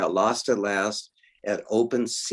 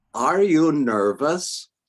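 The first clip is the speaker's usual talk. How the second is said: put-on strong German accent, high and raised; 6 semitones higher, 5 dB louder than usual. Standing in the wings as a voice behind you asks: Deva's strong German accent. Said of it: "A strong German accent".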